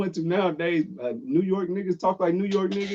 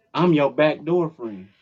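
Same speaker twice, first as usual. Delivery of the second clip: put-on strong Texas accent, lower pitch; 5 semitones lower than usual. Quoting people from a clip: imitating a Dallas accent. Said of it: "not everybody in Dallas talks like that".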